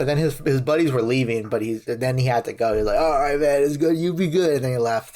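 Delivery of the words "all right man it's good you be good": dazed, zonked, spaced-out, out-of-it voice. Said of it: "he was just zonked".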